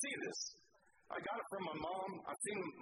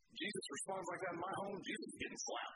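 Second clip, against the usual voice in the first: usual speaking voice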